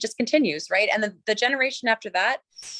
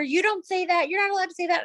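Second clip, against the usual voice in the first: put-on high, bossy, yelling five-year-old kid voice; 8 semitones higher than usual. Retelling how the son scolds his younger sister: imitating a child yelling. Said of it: "he'll be yelling at her".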